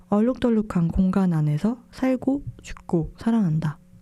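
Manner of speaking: usual speaking voice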